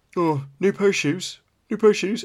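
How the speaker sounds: high, loud chirpy dad voice. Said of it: "I get the".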